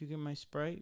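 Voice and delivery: mopey let-down tone. Retelling how someone asked whether he got a drink, imitating a sad request. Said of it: "Like all sad".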